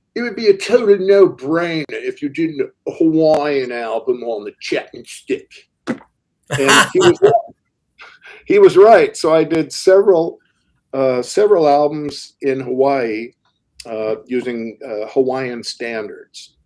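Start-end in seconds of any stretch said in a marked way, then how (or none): 0.1-5.6 put-on plain British accent. Retelling what Mick once told him, in a British accent. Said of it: "in a British accent".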